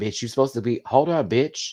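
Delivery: ordinary delivery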